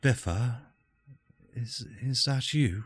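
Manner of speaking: gentle female voice. Voicing a voice from a stone that calls biffa: soft female voice. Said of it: "you just hear a soft female voice".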